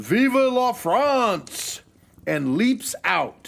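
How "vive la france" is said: high, slow, loud patriotic French shout. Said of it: "this French guy steps up and shouts".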